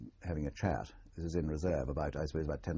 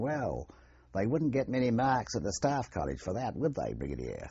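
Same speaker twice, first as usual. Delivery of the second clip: put-on amateur Australian accent, high, swooping; 7 semitones higher, 4 dB louder than usual. Retelling an Australian company commander's remark to a brigadier, attempting an Australian accent. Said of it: "forgive my Australian attempt at an Australian voice".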